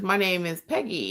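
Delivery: normal talking voice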